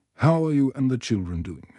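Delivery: plain reading voice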